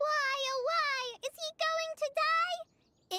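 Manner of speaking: very slow, high, drawn-out, whining yell. Explaining why Master got upset, a character repeats Paimon's cries, imitating Paimon's yelling. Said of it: "Paimon wouldn't stop yelling".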